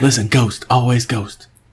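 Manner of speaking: put-on movie tough-guy voice. Quoting a movie line: Steven Seagal impression. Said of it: "Remember he said that in a movie?".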